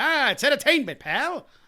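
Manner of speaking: very high, cartoonish rabbit voice. Mimicking how he said it, as if he turns into Bugs Bunny, in a Bugs Bunny voice. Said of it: "Why does he have to turn into Bugs freaking Bunny?".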